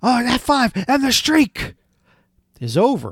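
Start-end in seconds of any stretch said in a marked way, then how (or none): 0.0-1.7 high-pitched announcer call, like a sports commentator. Retelling the announcer's call as the streak ends: Michael Cole impression. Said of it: "Michael Cole's the announcer in that match, and he goes".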